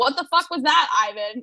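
ordinary talk

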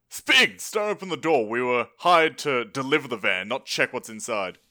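urgent, pressing, acted tone. Yelling in character at another player's character to leave the door shut: in-character yell. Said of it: "I yell at him".

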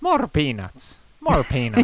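put-on Irish accent with swooping, swinging sing-song tune. Talking about Colin Farrell and asked for an accent, you do Colin Farrell with an Irish accent. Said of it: "Can you do an Irish accent?".

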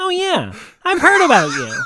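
very high character voice with big pitch swoops. As Gebetto walking up to Salius, speak in the Gebetto voice. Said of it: "Gebetto walks up to Salius and he says".

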